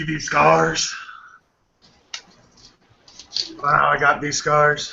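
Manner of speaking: put-on drunken, slurry voice. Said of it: "charm him over in your drunken state".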